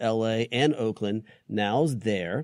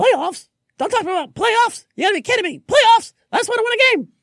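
very loud, shrill yell, high and hard; 9 dB louder than usual. Quoting a former head coach's famous line: Jim Mora impression. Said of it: "I was trying to do my Jim Mora".

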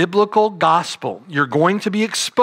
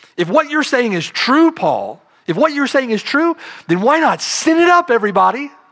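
put-on, high-pitched, sarcastic tone; 7 semitones higher than usual. Voicing the legalist's question to Paul: imitating a sarcastic question. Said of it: "Do you hear the sarcasm in the way that he asked".

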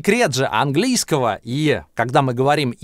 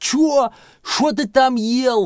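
put-on very high, deaf old man voice; 10 semitones higher than usual. Pronunciation teacher plays a grandpa who can't hear the student, in a deaf old man voice. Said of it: "А теперь я глухой дед, который вас не слышит".

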